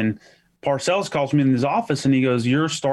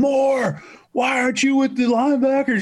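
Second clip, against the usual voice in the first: put-on, very high, shrill, high-pitched screaming; 11 semitones higher than usual. Retell how Parcells screamed at you after the group broke, imitating Parcells screaming. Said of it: "Parcells would be screaming at me going".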